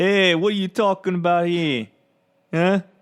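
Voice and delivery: loud, high put-on Brooklyn accent on every word. Talking about Brooklyn accents and Tolkien, a line in Brooklyn accent. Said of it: "Is that Brooklyn? I I thought it was".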